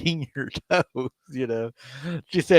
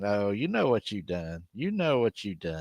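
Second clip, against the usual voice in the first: put-on laughing speech, lower and quieter; 4 semitones lower, 6 dB quieter than usual. Retelling a teasing accusation about a hidden phone: imitating someone laughing while talking. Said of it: "she said he was laughing, saying".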